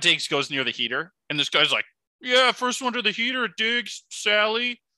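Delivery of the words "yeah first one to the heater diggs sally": play-acted very high, drawn-out, taunting heckling yell. Retelling how a guy yelled at the Bills receiver near the heater: retelling a guy's heckling yell. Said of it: "starts yelling at Stephon Diggs".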